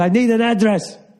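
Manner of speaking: very high, shrill, barking angry yell. Speaker retelling a man demanding an address, retelling a man's yell. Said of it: "Immediately yelling at me".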